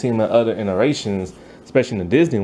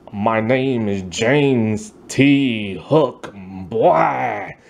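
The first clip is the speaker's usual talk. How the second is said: very slow, grand villain voice, every word drawn out. Describing a cartoon boss voiced by Tim Curry, doing the James T. Hook voice. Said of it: "He's always sounding like".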